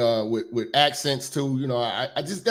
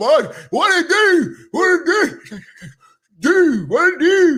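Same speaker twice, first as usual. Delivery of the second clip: put-on very high, slow Baltimore-accented voice; 13 semitones higher, 6 dB louder than usual. The speaker mocks how people from Baltimore talk, in a mocking Baltimore accent. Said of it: "they talk like they just ate a hot piece of catfish and it's burning the roof of their mouth".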